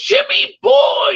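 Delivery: very high, silly, funny put-on voice. Retelling how Fuzzy would greet him each weekend, in a funny Fuzzy voice. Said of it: "He had this this kind of funny voice".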